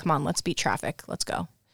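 cold whispered tone. Retelling what a stern dad says to his daughter: imitating a cold dad. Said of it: "so cold".

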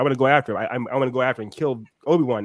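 ordinary talk

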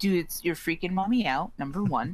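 normal talking voice

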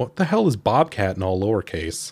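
ordinary delivery

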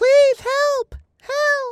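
put-on very high, very loud, shrill small child screaming. During a game scene, a small child's voice breaks in while instructions are given: small child shouting for help. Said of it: "You hear the voice of a small child while you're giving these instructions, shouting for help".

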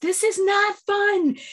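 imitated yelling at top of lungs. Retelling a young son's complaint on a merry-go-round: imitating son yelling at top of lungs. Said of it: "he yelled at the top of his lungs".

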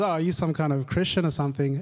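ordinary talk

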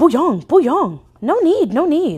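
insistent, urgent, high, emphatic exclamation. Teacher Sai backs away from the narrator's bow, with an emphatic exclamation. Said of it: "she exclaimed".

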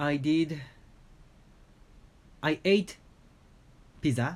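put-on Japanese accent in English. Asked about last night in a role-play, answering in a japanese english accent. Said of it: "can you do like Japanese English?".

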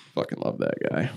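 ordinary talk

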